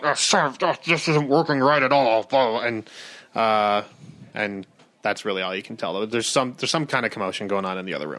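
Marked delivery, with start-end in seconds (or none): 0.0-2.2 muttering and mumbling under his breath. Narrating the scene as a guy down the hall mutters under his breath. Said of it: "some guy un- under his breath just going".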